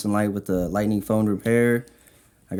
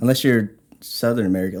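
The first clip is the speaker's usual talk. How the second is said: normal talking voice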